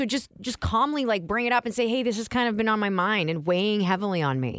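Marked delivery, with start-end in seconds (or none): none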